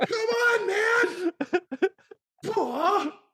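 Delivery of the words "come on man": put-on whining voice, higher pitch. Quoting imagined cut movie lines: Luke whining impression. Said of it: "lines cut from the movie of just Luke whining".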